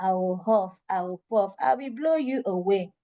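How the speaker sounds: dull, lifeless, flat, unexciting monotone. Demonstrating an unexciting way to read the wolf's line to a child. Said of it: "It's not exciting".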